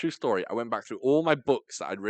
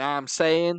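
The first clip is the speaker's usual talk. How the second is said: fake, terrible put-on American slang voice, pitched up; 6 semitones higher, 4 dB louder than usual.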